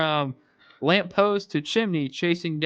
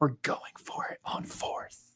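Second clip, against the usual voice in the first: huge, deep whispered voice, very quiet; 3 semitones lower, 9 dB quieter than usual. Narrating a tale, a voice in the dark speaks: low tremendous whisper. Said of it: "a low, tremendous voice whispering".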